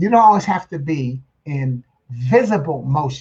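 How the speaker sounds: slow, "visible" split into two words with break.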